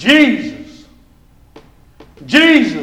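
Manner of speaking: calling out loudly, shouting. Speaker demonstrates shouting a name out loud at the mall: loud shout. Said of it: "with a loud voice, just shout it out".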